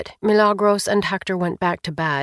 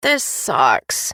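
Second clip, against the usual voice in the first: muttered low under the breath; 6 semitones lower than usual. Charlotte pulls on a pair of shorts, muttering. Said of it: "muttered Charlotte".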